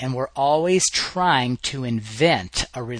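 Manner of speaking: invent stressed within a rising pitch line.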